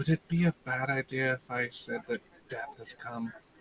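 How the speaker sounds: soft, gentle, hushed half-whisper. Half-whispering in character to a companion, asking about an announcement: half-whisper. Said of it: "I kinda whisper to Erwin".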